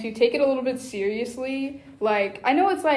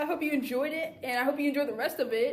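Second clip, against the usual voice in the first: friendly channel-host voice; 2 semitones higher, 6 dB quieter than usual. Thanking listeners at the end of an anniversary episode, sounding like a kids YouTuber. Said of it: "You sound like a kids YouTuber".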